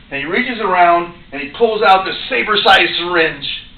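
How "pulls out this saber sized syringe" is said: ordinary talk, nothing marked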